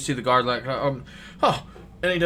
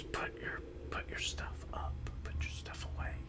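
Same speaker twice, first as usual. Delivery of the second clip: barely audible, very soft whisper. Voicing a character telling a player to put their stuff away: whispering. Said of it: "He's whispering to you".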